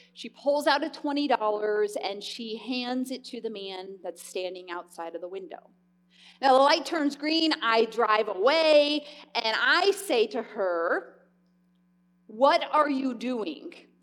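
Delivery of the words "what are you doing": really scolding, judgmental tone. Speaker retells questioning a best friend who handed cash out the window, mock-judgmental tone. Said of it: "I say it in a really judgmental way".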